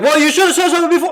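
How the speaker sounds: acted-out, very high, shrill, rushed, rapid angry yelling. Retelling how a woman responded at once in an altercation, mimicking her yelling tone. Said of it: "Her tone of voice is like".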